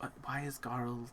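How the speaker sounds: faint, hushed, very quiet half-whisper. Acting out a scene where she asks a question, half-whispering very quietly. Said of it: "she whispers this very quietly".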